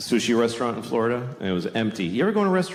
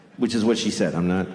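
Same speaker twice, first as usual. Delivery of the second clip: ordinary talk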